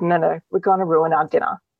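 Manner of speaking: ordinary talk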